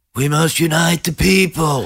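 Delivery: whinging, complaining drawl, high and slow. Trying out an impersonation, answering about working on it: whiny Joe Biden impression. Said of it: "He sort of whines a bit, Joe. He's sort of like".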